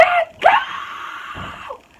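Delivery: mock very high, shrill, top-of-lungs shriek. Retelling how a girl screamed at the top of her lungs: imitating a scream at the top of lungs. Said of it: "she freaking screams at the top of her lungs".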